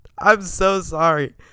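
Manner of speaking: very loud, high, laughing through the words. Apologizing to viewers for breaking off, laughing while talking. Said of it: "I literally just can't not laugh".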